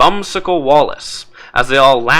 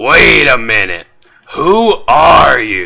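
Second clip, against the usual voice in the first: hoarse, raspy, slow voice; 4 dB louder than usual. Voicing a character who stops the players in the street: raspy voice. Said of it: "Get the raspy".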